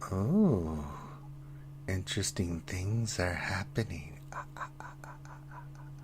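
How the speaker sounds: voice breaking into giggles. Voicing a giggling voice in a character's mind: giggling voice. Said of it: "familiar voice that starts giggling".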